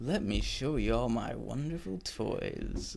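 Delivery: hushed, soft villain voice. Discussing an actor's take on the Joker, speaker mimics his voice: Joker voice impression. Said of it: "You know what he was doing sometimes, like".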